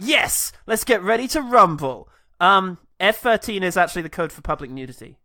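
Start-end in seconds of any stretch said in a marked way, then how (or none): 0.0-2.1 eager, excited rallying cheer. Retelling how the kid in a movie reacts to a radio call: imitating the kid cheering. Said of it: "And the kid's like".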